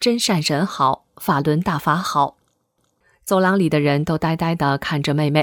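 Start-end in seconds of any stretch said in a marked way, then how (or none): none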